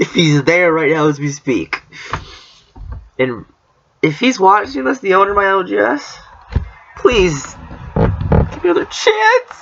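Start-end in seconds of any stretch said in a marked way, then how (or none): 3.2-9.4 fake sobbing, high with swooping pitch. Addressing the shop owner who may be watching the video, fake crying. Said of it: "Was that fake cry good?".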